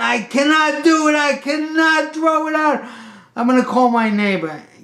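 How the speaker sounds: frantic hysterics, very high-pitched and loud. Retelling a phone call, the speaker imitates the man on the line, hysterical. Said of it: "He's hysterical".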